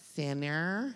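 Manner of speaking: low, hushed, soft drop on sinner. A speaker recalls a Saturday Night Live sketch character: Church Lady impression. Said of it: "she would say it like this".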